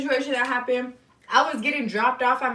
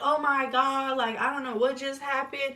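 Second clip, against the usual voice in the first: put-on tearful voice, breaking through sobs; 5 dB quieter than usual. Retelling a friend's phone call: imitating a crying friend. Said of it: "she was crying. She's like".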